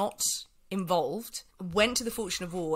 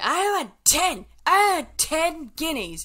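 put-on very loud, shrill, very high drunken yell; 10 semitones higher, 8 dB louder than usual. May, drunk, demands more money after a price is agreed, acting out drunken shouting. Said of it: "May starts shouting drunkenly".

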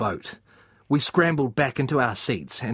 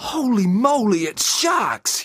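shrill, very high, long-stretched, drawn-out yell; 9 semitones higher, 4 dB louder than usual. Dan, on a boat with the narrator, as fins burst through the waves; yelling. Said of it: "yelled Dan".

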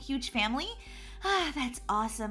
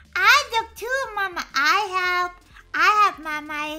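put-on babyish voice, higher and louder; 3 semitones higher, 8 dB louder than usual. Offering to help look for lost money: baby talk. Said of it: "You're talking baby talk".

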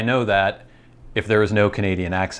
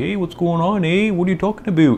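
cliché Canadian accent; 9 semitones higher than usual. Speaker contrasting real Canadian speech with the stereotype: stereotypical Canadian accent. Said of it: "the stereotypical like".

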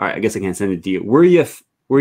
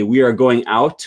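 ordinary talk, nothing marked

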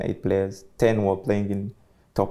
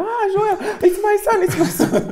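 very high, drawn-out, thrilled excited shout; 7 dB louder than usual. Retelling how his mom reacted when he came on: imitating his mom shouting.

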